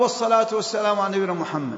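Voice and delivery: ordinary talk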